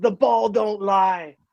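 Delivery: put-on shouted, yelled delivery in British accent. Retelling how the rival captain yelled by the bench, in a British accent. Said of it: "in his sh- stupid, shitty British accent, just yells".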